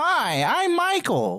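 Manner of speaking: very high, swooping, sing-song voice. Trying to match how Michael sounds, doing a higher-pitched Michael impression. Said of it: "a little bit higher pitched than that".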